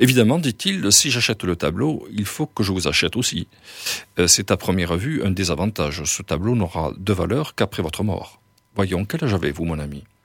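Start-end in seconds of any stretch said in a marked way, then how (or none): none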